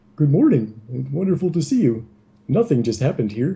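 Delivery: breezy, offhand, overly casual, nonchalant tone. Narrating a scene to players, the speaker voices Marthas opening the door; nonchalant. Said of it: "sipping his coffee nonchalantly".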